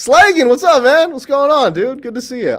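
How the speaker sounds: peppy, upbeat, chipper tone. Greeting someone as they show up, in a peppy mood. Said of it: "I'm in a peppy mood".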